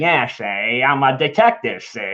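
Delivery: put-on low, tough-guy wiseguy voice. Retelling the grandfather's lines in the movie: Peter Falk impression. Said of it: "He's kinda like a Muggsy".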